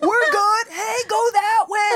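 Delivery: put-on yelling. Retelling how a character acts before signing underwater: imitating someone yelling. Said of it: "he's just yelling".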